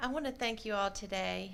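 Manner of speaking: soft voice, getting a little emotional. Speaker thanking everyone today, a little emotional. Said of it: "I get a little emotional".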